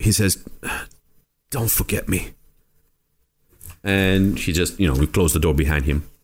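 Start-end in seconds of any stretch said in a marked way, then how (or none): 1.5-2.3 faint, weak, barely audible whisper. Voicing a dying prisoner as the players leave: barely whispering. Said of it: "he barely whispers".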